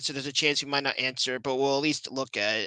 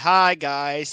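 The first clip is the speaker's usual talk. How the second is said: mock bored voice, louder; 6 dB louder than usual. Mocking the other speaker's greeting: imitating someone sounding bored. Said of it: "you almost sound like you're freaking bored".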